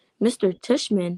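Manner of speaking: usual speaking voice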